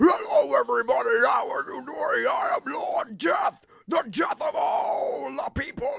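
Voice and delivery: booming, evil voice with high pitch. Trying out a voice for an evil version of Lord Death: evil Lord Death voice. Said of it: "How would Lord Death sound evil?".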